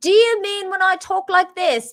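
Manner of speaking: fake English accent, pitched very high and loud. Answering whether a good English accent means talking like this: put-on British accent. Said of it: "when you mean English accent".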